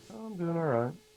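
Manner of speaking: lukewarm, unenthused, slightly high voice. Answering how they're doing after a hello: not thrilled. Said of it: "you don't sound thrilled".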